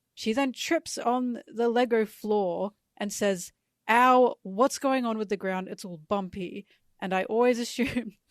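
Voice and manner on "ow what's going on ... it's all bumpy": usual speaking voice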